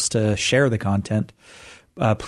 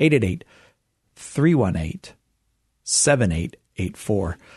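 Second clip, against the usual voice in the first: spoken slowly, unhurried. Host repeats the call-in phone number for listeners, saying the number slowly. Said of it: "I will say it again more slowly".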